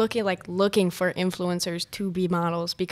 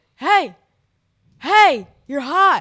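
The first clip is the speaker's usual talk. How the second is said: very loud, high-pitched screaming yell; 8 semitones higher, 11 dB louder than usual. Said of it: "He's like screaming at me".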